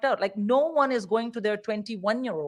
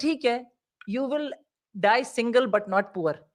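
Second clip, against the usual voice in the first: ordinary talk, nothing marked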